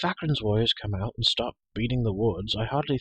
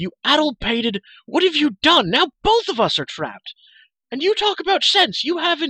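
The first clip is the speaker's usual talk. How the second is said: very loud, high, shrill shouting until breathless; 8 dB louder than usual. Reading a man's words to Elenry after she drops to the ground, shouting. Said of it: "he shouted".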